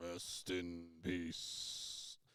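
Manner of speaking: barely audible, very quiet, dark, ominous mumble. Retelling how a wrestler cut his promos: imitating a dark mumbled promo. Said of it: "mumbling some darkness".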